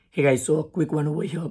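voice in bad shape. Speaker greets viewers while attending an event, bad voice. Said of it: "Sorry about my bad voice".

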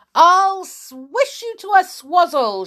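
very high, shrill, raging and furious yell. Slashing the air with her walking stick, a woman shouts. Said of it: "she shouted".

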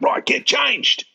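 high-pitched called-out voice. Retelling what the staff member yelled at the group: imitating someone yelling. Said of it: "he yelled out".

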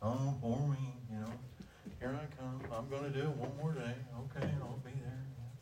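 gloomy, mopey, glum and put-upon voice. Describing someone who is always down, doing Eeyore: gloomy Eeyore voice.

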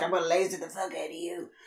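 callous, careless delivery, as if nothing matters. Retelling a scene where Homelander heats milk with laser eyes: imitating Homelander. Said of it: "He's just like".

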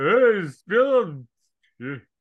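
put-on loud, dazed, punch-drunk, beat-up boxer voice. Retelling how a goon told his chief to spill it, goon talking like Rocky. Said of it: "he says it like Rocky, if he just had like ankle surgery".

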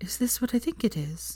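soft, almost whispering, barely above a whisper. A woman who has just drawn out a small velvet box asks a man: barely above a whisper. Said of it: "her voice barely above a whisper".

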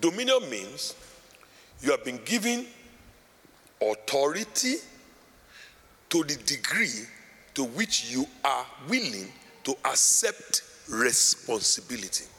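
slow, deliberate, every word laid out carefully. Speaker restating a definition so listeners can understand, slow and deliberate. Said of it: "Let me say it slowly".

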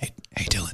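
hushed whisper. In a comedy bit, a character calls to Dylan before a secret announcement, whispering. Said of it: "Why are we whispering?".

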